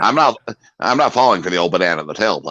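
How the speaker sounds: put-on low generic guy voice.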